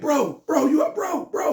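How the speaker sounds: thrown-out holler. Retelling the man running around the counter after the shot; retelling someone hollering. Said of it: "He hollering".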